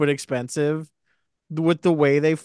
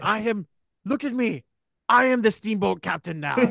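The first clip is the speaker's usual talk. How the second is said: jokey, high-pitched put-on French accent; 6 semitones higher than usual. Speaker playing a steamboat captain while friends joke around, in a French accent. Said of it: "Why is he French?".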